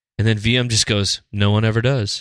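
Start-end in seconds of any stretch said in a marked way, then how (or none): 1.3-2.2 put-on comforting, soothing tone. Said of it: "eerily a comforting voice of V M".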